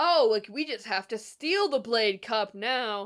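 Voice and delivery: put-on loud, offhand, blurted remark. Recapping a story where a character speaks within his dad's hearing: retelling someone speaking loudly. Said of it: "Cole is very loudly like".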